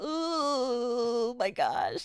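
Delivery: mock ugly crying. Telling listeners about reacting to a big story moment, imitating ugly crying. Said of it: "I absolutely ugly cried".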